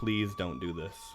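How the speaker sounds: quiet, soft-spoken, low-key delivery. Voicing a character facing a drawn sword: quiet voice. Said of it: "he just quietly says".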